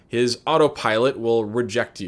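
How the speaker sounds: normal talking voice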